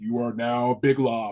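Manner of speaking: put-on voice-of-god announcer voice. Retelling a panel moment of being named Big Lob: Lenny's voice of God. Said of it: "this voice of God".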